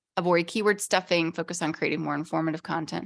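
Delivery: ordinary delivery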